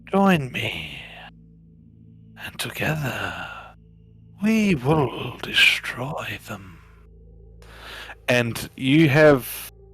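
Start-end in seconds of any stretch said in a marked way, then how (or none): 0.1-6.8 swooping, coaxing, persuasive tempter voice. Voicing a voice in a player's head urging betrayal: persuasive voice in the head. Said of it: "the voice that is convincing you".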